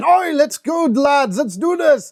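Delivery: bad Scottish accent, slow and high. Voicing Flynn rallying the lads, Flynn's bad Scottish accent. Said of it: "attempting a Scottish accent when I am talking".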